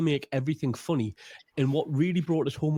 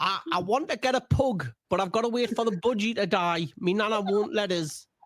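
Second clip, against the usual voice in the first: silly, daft, high, stupid put-on voice; 7 semitones higher than usual. Retelling what his dad said into the phone, in a stupid voice. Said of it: "he's done a stupid voice for five minutes".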